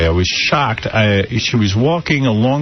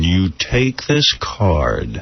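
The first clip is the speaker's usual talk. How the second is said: mock crazy tone, lower; 4 semitones lower than usual. Retelling what a stranger in a car insisted to her: imitating a man's crazy tone. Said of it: "with that kind of tone, crazy tone".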